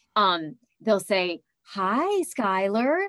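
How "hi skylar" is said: put-on slow, drawn-out, condescending toddler talk. Retelling how people greet her nonspeaking son: imitating slow, loud talk to a toddler. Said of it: "they talk to him like you would a three-year-old".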